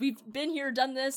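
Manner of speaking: usual speaking voice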